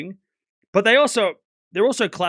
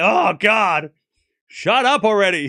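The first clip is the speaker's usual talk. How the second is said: put-on annoyed exasperation, louder; 4 dB louder than usual. Retelling a player's reaction to a fan's yell, mock exasperation. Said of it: "And then it's like".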